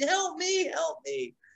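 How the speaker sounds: mock very high, stretched-out, drawn-out screaming. Retelling a girl being picked up and kidnapped in a play, imitating her screaming. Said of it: "she's yelling, screaming".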